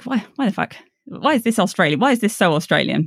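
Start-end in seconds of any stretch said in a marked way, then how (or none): none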